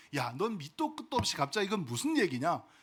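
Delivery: plain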